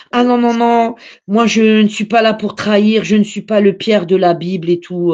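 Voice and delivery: ordinary delivery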